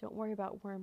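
ordinary delivery

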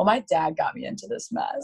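mock sassy, childish attitude voice. Retelling own reply to a coach at six: imitating own childish attitude. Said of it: "a six-year-old with attitude was like".

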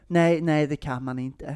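kind, gentle, soft and kindly tone. Retelling how a boy answered another kid's threat, retelling a kind, gentle no. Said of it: "lite snäll liksom".

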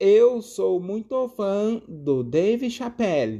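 very slow translator-app computer voice. Telling how a translation gadget repeated his words aloud: Google translator voice. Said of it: "sabe a vozinha do Google".

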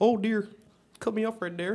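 clumsy put-on Canadian accent. Speaker gives an example for a Canadian road rage game, bad Canadian accent. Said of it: "I can't believe I tried to do a Canadian accent".

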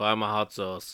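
low, dead-level monotone with no inflection. Showing how the line should be said, in a monotone. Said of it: "But like that monotone".

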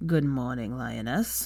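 groggy, low, gruff, sleep-thick just-woken voice. Just up, he opens his door and greets the woman there: gruff, sleep-thick voice. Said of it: "he said gruffly, his voice still thick with sleep".

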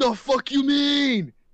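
high, loud, slow offended outburst in Australian accent.

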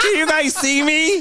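very high, cheery commercial spokeswoman voice. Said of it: "Be like Flo from the Progressive commercial".

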